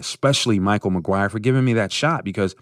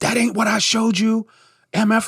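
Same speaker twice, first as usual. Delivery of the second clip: mock, very high-pitched screaming, cursing tirade; 13 semitones higher than usual. Retelling the program director's call after his first breaks: imitating someone cursing him out. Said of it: "And he cursed me out".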